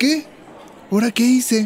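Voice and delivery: high-pitched, mock-innocent surprise. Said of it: "puedes poner cara de sorpresa y decir".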